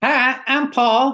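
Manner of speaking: high-pitched cartoon-style monkey voice. Put on the spot by the host, the guest does the Paul the monkey voice. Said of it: "you still did a voice".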